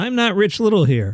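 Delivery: plain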